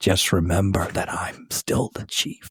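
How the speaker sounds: soft, breathy whisper under the breath. Retelling a movie scene where a chief leans in: imitating a whisper. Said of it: "He whispers, he leans in and whispers".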